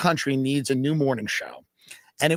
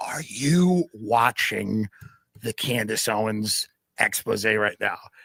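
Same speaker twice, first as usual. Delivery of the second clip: put-on whispered words; 5 semitones lower than usual. Retelling what the man who checks them in asked in the hotel lobby, retelling a whisper. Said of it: "he's whispering in the lobby".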